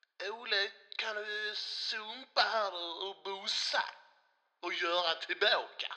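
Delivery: Scanian Swedish dialect. Switching voices on the show, speaking to Ola in a Skåne accent. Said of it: "Skånska!".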